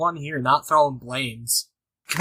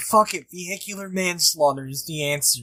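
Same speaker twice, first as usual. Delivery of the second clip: ordinary delivery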